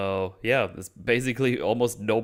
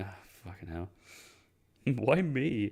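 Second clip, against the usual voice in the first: mock fed-up griping grumble, rising pitch; 5 dB quieter than usual. Retelling a scene where the chief summons him: imitating an annoyed reaction. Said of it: "And just goes there annoyed".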